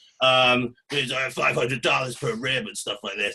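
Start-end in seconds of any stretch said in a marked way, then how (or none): 0.9-2.4 casual, fake American accent. Speaker quotes a man, giving his words a put-on american accent. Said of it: "I'm going to give it an American accent".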